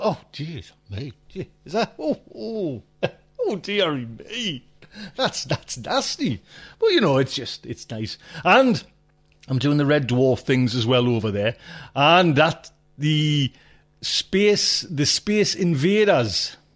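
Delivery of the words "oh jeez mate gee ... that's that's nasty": put-on crestfallen, let-down, dismayed exclamations. Imitating viewers who see the face behind the voice: imitating someone feeling let down. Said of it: "some might be, like, down".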